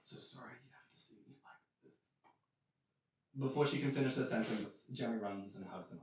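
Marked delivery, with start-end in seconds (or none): 0.0-1.9 rasping, barely voiced, very quiet hoarse whisper. Voicing an undead mother greeting her grown son: hoarse whisper. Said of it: "in this, uh, hoarse whisper".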